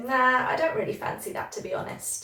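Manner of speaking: negative, unkeen, unenthusiastic intonation. Teaching a phrase for turning something down, said with negative intonation. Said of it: "my intonation was kind of negative".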